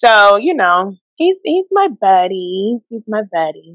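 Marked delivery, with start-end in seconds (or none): 1.2-3.5 fond, affectionate, sweet, slow, sing-song delivery. Describing a friend to another speaker: said sweetly. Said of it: "you said that so sweetly".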